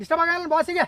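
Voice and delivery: high-pitched, loud speech.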